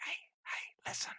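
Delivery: creepy, unvoiced whisper.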